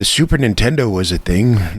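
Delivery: put-on elderly man's voice. Joking about an old digital camera era: put-on old man voice. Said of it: "get your old man voice".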